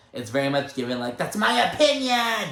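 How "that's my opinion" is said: very high, shrill, upset yelling outburst. Acting out a woman who cracks and flips out in front of everyone, imitating an upset woman yelling. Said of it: "She yells".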